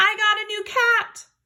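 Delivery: very high, excited shouting. Explaining what an exclamation point means by giving an example: yelling. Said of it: "I'm yelling something like".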